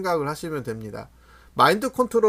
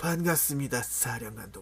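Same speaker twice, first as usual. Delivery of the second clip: breathy put-on character voice; 3 semitones lower, 11 dB quieter than usual. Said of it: "성대모사를 하려니까 힘드네".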